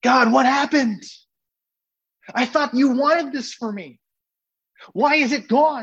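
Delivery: high, distraught cry, sounding lost.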